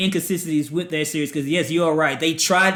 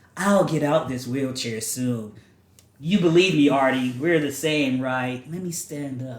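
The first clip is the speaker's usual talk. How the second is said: flat, monotone put-on delivery; 3 semitones lower than usual. Mocking a TV character's line delivery: monotone Quinn impression. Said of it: "she was very monotone".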